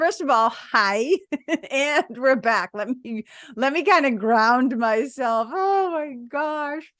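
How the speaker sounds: talking while laughing, giggling through the words. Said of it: "I'm still laughing".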